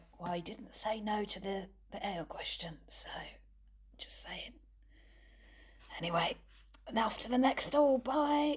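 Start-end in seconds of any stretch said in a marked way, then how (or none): 0.2-4.5 very quiet, barely voiced sideways whisper. A player speaks as Clarence to Quince in a game: Clarence whispering. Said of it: "whisper to Quince and be like".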